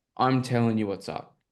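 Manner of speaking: ordinary talk, nothing marked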